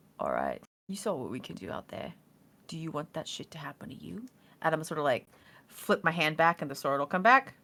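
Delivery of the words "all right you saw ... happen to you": very quiet, hushed, close-up voice. Player leaning over a guy to speak to him, really quiet voice. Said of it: "in like a really quiet voice be like".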